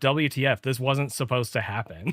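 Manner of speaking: exasperated, frustrated, fed-up tone. Retelling another player's reaction after a lost race: imitating frustration. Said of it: "he was frustrated by it".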